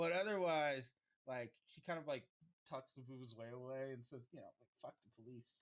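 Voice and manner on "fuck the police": muttered under the breath, quieter. Voicing a character who tucks something away: muttered under her breath. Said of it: "says it real under her breath".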